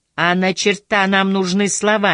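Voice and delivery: ordinary delivery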